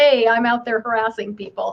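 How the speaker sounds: ordinary talk, nothing marked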